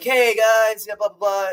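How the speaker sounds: talking like a surfer. Retelling how a restaurant server greeted the table: surfer-dude voice. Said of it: "he spoke like a surfer, man".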